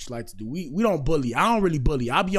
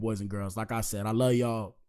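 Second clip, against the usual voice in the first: plain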